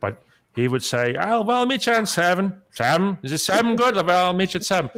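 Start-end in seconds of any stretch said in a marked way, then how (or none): 1.2-4.9 put-on high, elderly great-grandfather voice.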